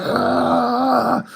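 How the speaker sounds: high-pitched mock scream. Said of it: "She's, like, screaming".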